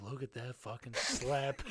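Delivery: sneaky, hushed half-whispered stage whisper. Speaker retells what someone half-whispered to him at school, retelling a half-whisper. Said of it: "Dahl whispers to me".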